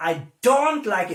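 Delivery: strong emphasis landing on don't. English lesson on stressing negative auxiliaries: stress on don't. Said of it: "we also stress negative auxiliary".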